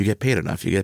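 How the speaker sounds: put-on mutter under the breath. After a woman says she loves her job, the speaker replies, retelling an under-breath mutter. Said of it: "And I'm under my breath".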